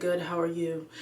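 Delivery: plain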